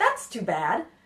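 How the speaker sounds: said happily and brightly, cheerful tone. Showing learners the wrong way to react when someone can't come, said happily. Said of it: "So don't say it very happily".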